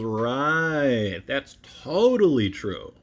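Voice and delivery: heavily sarcastic, "right" stretched very slowly. Explaining how you can hear sarcasm, giving a quick example, sarcastic. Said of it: "You can tell by how I'm saying that that I'm lying or exaggerating".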